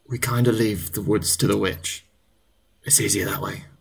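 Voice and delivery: quiet, hushed, confiding murmur. A guard leans in among the other guards to answer, in hushed tones. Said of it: "In hushed tones".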